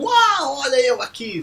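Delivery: high, drawn-out, showy, look-at-me show-off voice. Describing someone who arrives putting on a show, mimicking a show-off. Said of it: "essa mudança de tom de voz foi maravilhosa".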